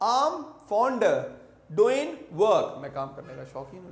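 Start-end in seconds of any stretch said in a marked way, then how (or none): 0.0-2.8 slow, louder British accent with blended, dropped sounds. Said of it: "Like this they say".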